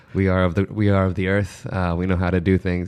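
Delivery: ordinary delivery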